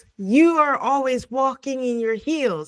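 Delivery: irritated, high-pitched exclamation, held in check. Retelling what a man yelled at a woman, retelling a yell. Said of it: "So he yells".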